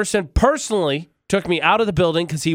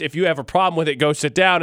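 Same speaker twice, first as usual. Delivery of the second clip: usual speaking voice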